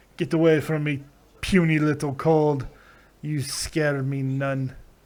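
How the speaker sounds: put-on Russian accent. Imagining how the co-host would talk back to a cold, in a put-on russian accent. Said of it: "I don't know why I just made you Russian".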